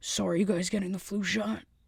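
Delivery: put-on older man's voice. Retelling what the big boss said to two coworkers, imitating an older man. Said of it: "he talks like this. He's an older man".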